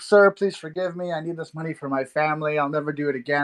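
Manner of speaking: put-on apologetic, pleading voice. Retelling a scammer's messages after being caught: imitating an apologetic plea. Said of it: "he got so apologetic".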